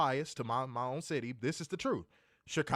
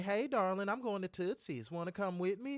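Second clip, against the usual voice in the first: put-on high, cute, subtle little Nashville accent; 6 semitones higher, 4 dB quieter than usual. Imitating a Nashville girl asking him along: cute subtle Nashville accent. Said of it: "they all got them cute little subtle accents".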